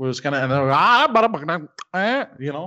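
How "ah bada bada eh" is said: very slow, drawn-out fake Hindi babble. Retelling what a man said while pointing his phone: imitating Hindi speech. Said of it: "I like your imitation of Hindi".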